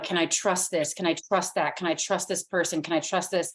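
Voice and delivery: ordinary talk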